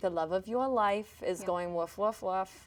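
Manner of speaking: put-on heavy Long Island accent. Acting out a stranger in a grocery store: Long Island Medium accent. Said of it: "Do the accent a little more".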